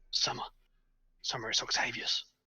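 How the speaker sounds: soft, hushed half-whisper. Invisible, Octavius speaks into the hall to reach Summer, whispering. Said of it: "kind of whispering".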